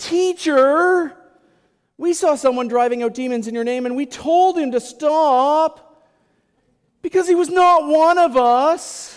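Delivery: put-on very high, very loud whiny child's voice. Retelling a Bible story, the speaker voices the disciple John: mock-whiny John voice. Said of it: "you can hear it like that whiny grade six voice".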